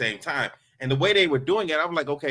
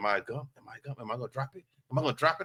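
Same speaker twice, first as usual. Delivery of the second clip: hushed, close half-whisper under the breath; 7 dB quieter than usual. Retelling the ring exchange at the wedding: imitating Travis half-whispering. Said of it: "Travis is whispering in my ear".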